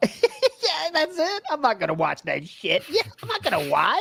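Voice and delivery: mock squeaky voice jumping up an octave.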